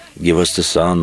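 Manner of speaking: ordinary talk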